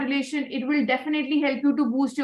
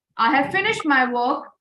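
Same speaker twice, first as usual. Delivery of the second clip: raised voice, projected to carry further; 2 semitones lower than usual. A trainer demonstrating to a listener how to say a sentence, asking whether they can hear the rise, in a louder voice. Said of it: "Can you see the rise in my voice?".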